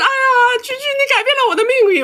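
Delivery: high, weepy, tearful, sobbing gush of crying. Explaining why they avoid big dinners, imitating a girl crying. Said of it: "就开始哭".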